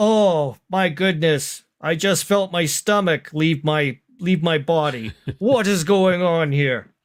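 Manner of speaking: put-on old man character voice. A game master voices an old passenger as the ship lands, in old man character voice. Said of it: "The old man sitting there pondering, / The old man sitting there pondering, / The old man sitting there pondering".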